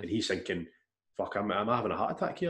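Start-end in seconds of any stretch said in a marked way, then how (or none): none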